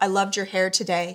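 ordinary talk

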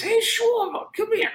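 imitated Southern California voice. In a hotel room in LA, speaker imitates him calling Schwarber over: high SoCal voice. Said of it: "in his only voice".

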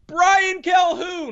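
very high, sudden shouted yell. Telling how a decision was made, a random voice from the back of the room: imitating a random guy yelling. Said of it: "a random voice at the back of the room yells".

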